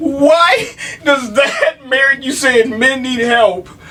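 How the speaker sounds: slow, tearful, crying-laughing shout. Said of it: "He's literally crying right now".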